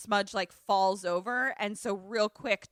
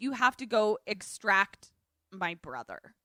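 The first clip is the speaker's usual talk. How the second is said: ordinary talk, nothing marked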